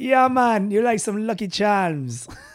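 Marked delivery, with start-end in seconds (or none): 0.0-0.7 fake Jamaican accent, higher and louder. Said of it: "I'm automatically going Jamaican".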